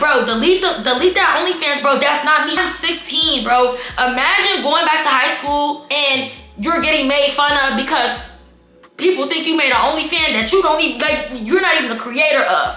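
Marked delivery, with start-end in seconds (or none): none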